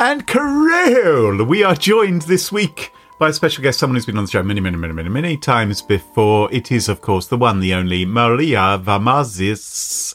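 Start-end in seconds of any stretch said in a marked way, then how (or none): 8.1-10.1 rough put-on Greek accent, much lower. Host introducing a returning special guest on the show, in an approximate greek accent. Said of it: "say it in an approximate Greek accent".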